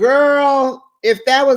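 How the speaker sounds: high-pitched, loud, exasperated outburst.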